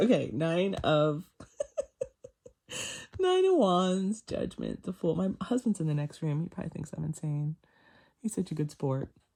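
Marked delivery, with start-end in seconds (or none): 0.0-5.1 giggly, giddy laughter with swooping pitch. Reading out tarot cards, laughing and giddy. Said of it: "I can't stop laughing".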